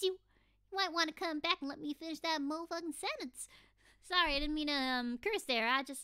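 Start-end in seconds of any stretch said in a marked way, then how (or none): 0.0-3.5 put-on a little too strong Southern accent. Snapping at someone who walked off mid-sentence: a little too southern. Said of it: "I got a little bit too southern".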